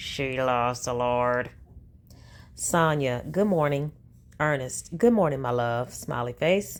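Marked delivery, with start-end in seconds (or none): 0.0-1.5 put-on gritted teeth, lower, slower. Repeating Sonia's words, mocking them as said through gritted teeth. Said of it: "said that through gritted teeth".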